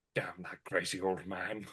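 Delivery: put-on muttering under breath. Imagining a reaction after hearing screaming: muttering under his breath. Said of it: "Ray goes under his breath".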